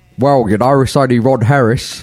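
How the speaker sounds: put-on New Zealand accent. A podcast co-host introduces himself as Ron Harris: Ron Harris impression, Kiwi twang. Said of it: "With a Kiwi twang".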